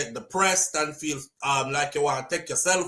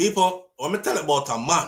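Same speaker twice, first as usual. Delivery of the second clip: voice cracking, breaking up mid-line. Speaker telling an audience about a man, voice cracking. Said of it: "My voice cracked talking about this man".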